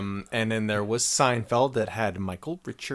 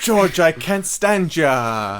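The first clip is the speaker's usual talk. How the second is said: high, loud, belted-out exclamation; 7 semitones higher, 6 dB louder than usual. Riffing a joke scene about two actors: Daniel Radcliffe impression. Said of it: "That was a great Daniel Radcliffe".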